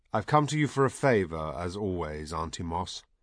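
ordinary delivery, nothing marked

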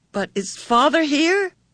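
tremulous, trembling, very high-pitched voice. Meg asks a question, voice trembling. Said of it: "Meg asked tremblingly".

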